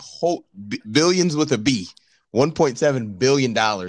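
plain

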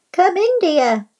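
small, little voice. Narrator reads the wolf in Grandmother's bed answering the door, small voice. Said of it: "called the wolf in a small voice".

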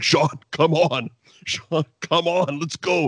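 mock, high, stretched-out, drawn-out coaxing call. Retelling a wrestler calling from ringside: imitating Jesse yelling. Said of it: "he keeps yelling".

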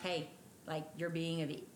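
ordinary talk

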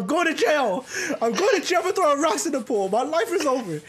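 acted scared voice. Speaker reenacting their younger self after throwing rocks in a pool, retelling past panic. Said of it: "I was fucking scared for my life".

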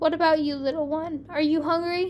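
plain

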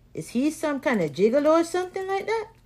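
put-on Spanish-accented speech.

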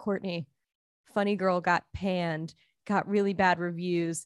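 soft, hushed stage half-whisper. Retelling what a boyfriend half-whispered late at night: imitating a half-whisper. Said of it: "He was, like, whispering to me".

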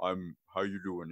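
put-on soft, deep-voiced kid's voice. Retelling a story about a young kid, imitating the kid's deep voice. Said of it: "this kid had a deep voice too".

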